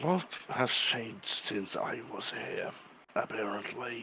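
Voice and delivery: really quiet muttering under the breath. Playing a character who mutters a question about what has changed: under his breath, really quiet. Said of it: "he will say this under his breath, really, like, really quiet".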